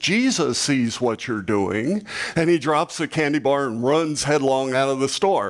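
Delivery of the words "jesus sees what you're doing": usual speaking voice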